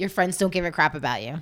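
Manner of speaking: mock, blunt, sassy, cutting put-down with attitude. Retelling what a cast member said while looking at someone: imitating someone sassy. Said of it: "such sass".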